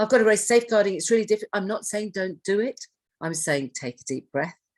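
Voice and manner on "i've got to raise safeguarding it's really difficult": high, loud panicked blurt. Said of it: "panicking and going".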